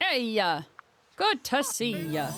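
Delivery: put-on Minnesota accent. Playing a character in an improvised bee scene, the speaker greets someone in a Minnesotan accent. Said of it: "you can be Minnesotan".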